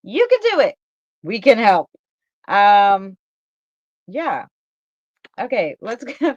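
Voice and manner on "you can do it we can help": swooping TV commercial announcer voiceover delivery. Repeating what he said and how it sounded: imitating a commercial. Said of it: "He sounded like a commercial".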